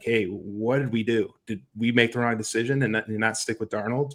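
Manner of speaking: ordinary talk, nothing marked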